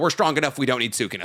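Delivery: plain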